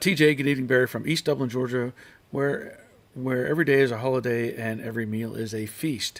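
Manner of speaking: ordinary delivery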